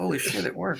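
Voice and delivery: cool, offhand aside kept under control. Showing how to react to the machine working: muttered under the breath. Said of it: "under your breath".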